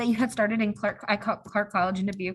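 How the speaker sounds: stammering, tripping over a word. Interviewer asking a guest how they started out, stuttering. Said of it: "Sorry for my stutter there".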